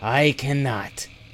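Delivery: stammering out words. A frozen owlbear facing a dagger answers, stammering. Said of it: "he stammered".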